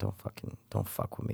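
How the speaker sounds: breathy whispered put-on voice, breathed out. Guessing a movie in a trivia game, doing a Michael Caine impression. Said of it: "Michael Caine impression".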